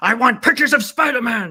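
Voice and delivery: loud, high, energetic. Asked to say the line for John's sake, high-energy J. Jonah Jameson impression. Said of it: "the energy brought to that".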